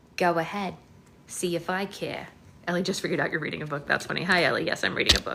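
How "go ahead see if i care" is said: ordinary talk, nothing marked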